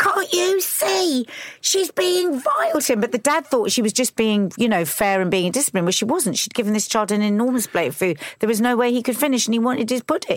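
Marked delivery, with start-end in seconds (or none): 0.0-3.0 very high, very slow, drawn-out outraged yell. Retelling watching a documentary and screaming at the telly: imitating screaming. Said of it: "I was screaming at the telly saying".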